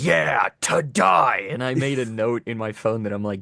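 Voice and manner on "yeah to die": overdone, unhinged villain shout, rough and high. Retelling how Captain Cold yells in a fight scene: imitating Captain Cold yelling like a maniac. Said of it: "he yells like a".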